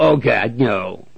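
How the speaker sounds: very loud, jeering, taunting mocking echo. Retelling how God will mock back a condemned person's plea: mocking imitation. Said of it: "just like mocking you back".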